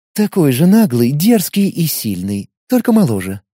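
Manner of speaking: affectionate, tender, fond tone. In a novel, a girl speaks to the narrator, affectionately. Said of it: "ласково проговорила девушка".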